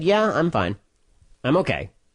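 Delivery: ordinary talk, nothing marked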